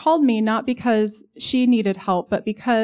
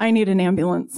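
imitated frightened elderly voice; 2 semitones lower than usual. Retelling a call from a caller: imitating a scared, shaky old man. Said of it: "it's a scared, shaky, sweet old man".

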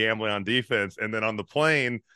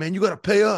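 mock yelling, pitched up and heated; 9 semitones higher, 4 dB louder than usual. Retelling a player on the bench yelling about gambling debts: imitating Kevin Garnett yelling. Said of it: "he's yelling all this stuff".

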